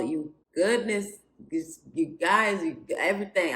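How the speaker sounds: stammered false starts, tripping over words. Welcoming viewers back to the channel after a bad date, stuttering. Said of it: "I'm stuttering because".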